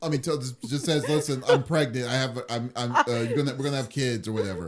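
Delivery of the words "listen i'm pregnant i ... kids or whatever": ordinary talk, nothing marked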